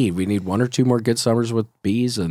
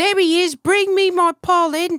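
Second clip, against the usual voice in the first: very high, slow, put-on British accent. Joking about a bee queen asking for pollen: British-accented queen bee voice. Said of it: "the queen talks kinda like a British person".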